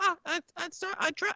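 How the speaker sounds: squeaking goblin voice. Narrating a tavern scene, the speaker voices the goblin who brought the pints: squeaky goblin voice. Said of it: "the goblin's just sort of squeaking like".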